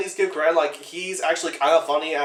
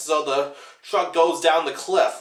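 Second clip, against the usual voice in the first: ordinary talk, nothing marked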